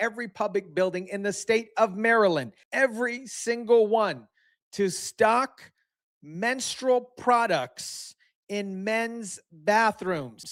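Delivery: slow, deliberate, every word emphasized and spelled out. Commentator telling his audience about a Maryland bill; said slowly. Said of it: "I hope I said that slow enough".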